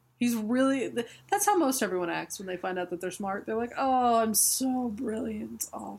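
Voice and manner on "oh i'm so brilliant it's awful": put-on despairing voice. Acting out a comic character who is upset about being brilliant: imitating someone upset at being brilliant. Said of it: "he looks really upset that he's brilliant".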